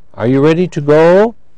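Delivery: rising, questioning lift on go. Explaining how a yes-no question sounds, rising on 'go'. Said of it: "Just rising".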